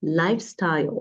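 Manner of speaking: "lifestyle" with "life" high and "style" falling. Vocabulary lesson on lifestyle words: pitch up on life, down on style. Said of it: "notice that my voice goes up at the beginning and then goes down".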